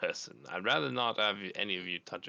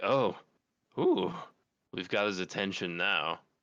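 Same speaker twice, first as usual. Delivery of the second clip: skull voice chuckling while speaking; 4 dB louder than usual. Voicing a skull that starts to laugh: laughing skull voice. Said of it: "the skull, like, starts to laugh. He's like".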